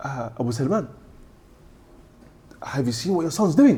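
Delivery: shocked, startled tone. Retelling what a man at the mosque asked the father: imitating a shocked tone. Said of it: "In that same shocked tone".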